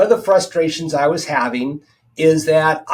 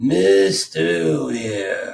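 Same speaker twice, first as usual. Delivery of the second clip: put-on low, older British gentleman's accent; 4 semitones lower than usual. Retelling how a doctor leaned back and addressed the speaker, in Doctor Haldane's older British accent. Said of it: "in his kind of his older British accent".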